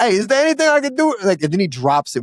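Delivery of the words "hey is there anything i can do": put-on very high-pitched New York accent. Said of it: "having the most inconsistent".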